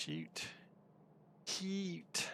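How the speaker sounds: whispered, over-the-top put-on Australian accent. Showing how Australians like to say a word, in a very fake Australian accent. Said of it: "a very fake Australian accent".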